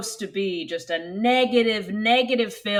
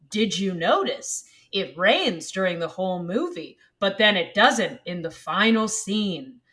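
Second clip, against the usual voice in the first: put-on snarky, knowing, sarcastic delivery. Listing hidden movie details a rewatcher might point out: put-on sarcastic voice. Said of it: "I say all of these things in a sarcastic voice".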